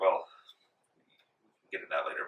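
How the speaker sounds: choked with tears. A narrator voices a mother asking the party to help her kids, tearing up. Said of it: "she like kind of tears up".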